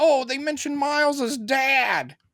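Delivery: very high, thrilled, gushing voice, "dad" drawn out. Recounting how everyone reacted to a show detail, imitating excited fans. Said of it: "everyone got excited".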